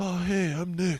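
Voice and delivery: put-on acted deep child voice. Showing the impression of Nick done at school: impression of Nick. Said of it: "doing impressions of you".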